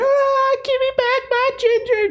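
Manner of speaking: screaming woman's voice. Narrating a scene as cars peel out, the speaker voices a woman screaming. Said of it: "this woman's screaming".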